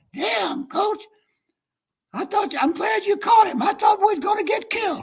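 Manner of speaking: raspy blurt pushed very high. Retell what Orr said to you, his coach, in Orr's raspy voice. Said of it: "Orr says in that raspy voice".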